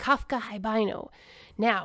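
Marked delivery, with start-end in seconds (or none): none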